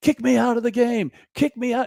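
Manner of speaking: mock yelling, very high-pitched and shrill. Recounting an old clip, you act out the moment at the umpire, imitating Billy Martin yelling. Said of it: "he's yelling at the umpire".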